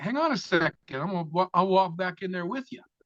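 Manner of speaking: high, mild voice calling out across a distance. Retelling the shouted reply from the man in the car: imitating someone yelling back. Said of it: "the guy in the car yells back at him".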